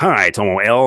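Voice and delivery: attempted American accent. Greeting an audience member during shout-outs, doing their best American accent. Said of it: "I'm doing my best American accent here".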